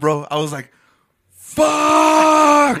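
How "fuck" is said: mock, very high, drawn-out full-lung scream. Retelling a frustrated moment outside a closed club: imitating own yell. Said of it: "on the top of my lungs".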